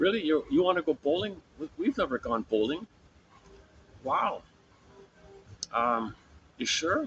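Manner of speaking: high voice full of delighted surprise. Acting out a father asked to go bowling: acting delightfully surprised. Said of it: "The father would be delightfully surprised".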